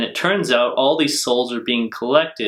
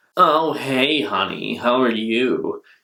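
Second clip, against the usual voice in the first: put-on complaining voice, slower. Comparing voice actors, quoting how the original Mai sounded: imitating Mai, a bit complaining. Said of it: "sounds a bit more complaining".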